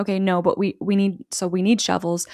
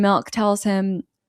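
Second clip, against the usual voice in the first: plain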